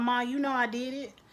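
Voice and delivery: ordinary talk, nothing marked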